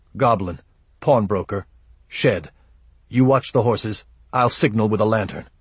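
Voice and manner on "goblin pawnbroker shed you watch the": usual speaking voice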